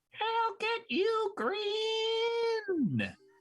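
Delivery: tiny clown voice, very high-pitched, very slow, drawn-out. Voicing a clown shouting from a falling group: little voice of a falling clown. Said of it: "this little voice from the middle of the falling group of clowns".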